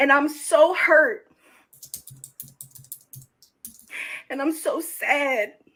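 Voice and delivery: on the verge of crying. Talking to the online audience about being hurt, near tears. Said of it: "I'm about to cry on the internet".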